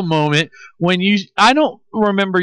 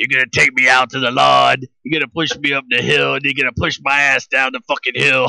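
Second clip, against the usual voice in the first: put-on, lower voice like gargling glass; 5 semitones lower than usual. Talking with another man, do your best take on someone you want on the show; D-Rock impression. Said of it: "That's my best D-Rock".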